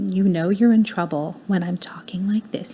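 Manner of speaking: stern, you're-in-trouble disciplining parent voice. Giving advice on saving your voice with kids, quiet mom discipline voice. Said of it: "make your your quiet voice your mom discipline voice".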